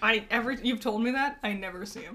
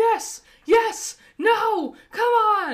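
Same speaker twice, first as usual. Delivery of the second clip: mock yelling, higher and louder; 12 semitones higher, 9 dB louder than usual. Imitating a dad watching football: imitating a dad yelling at TV. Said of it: "yelling at the screen".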